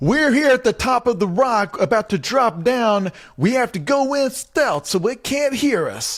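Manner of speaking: put-on, very high, drawn-out shouty delivery. Retelling how the people on the show talk to camera: imitating a shouty interview to camera. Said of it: "doing the shouty interview to camera".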